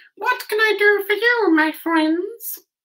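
very high, squeaky, tiny mouse voice. Reading a story aloud, voicing the mouse Queen in a squeaky little voice. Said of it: "asked in her squeaky little voice".

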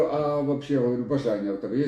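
ordinary talk

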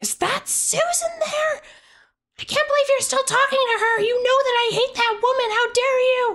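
enraged, very high furious shriek. Voicing a caller on the other side of a phone: screaming furiously. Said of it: "a voice that you recognize on the outside just screaming".

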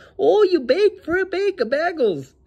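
very high, teasing, put-on Minnesota twang. Retelling mocking people at summer camp: mock minnesota accent. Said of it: "we would hella shit on people".

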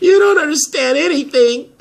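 high, loud crying outburst, weeping through tears. In a drama, a character answers Cutter after he asks why they're crying: crying. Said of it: "Why are you crying about that?".

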